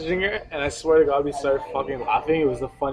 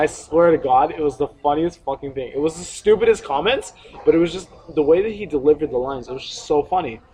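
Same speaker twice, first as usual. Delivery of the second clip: usual speaking voice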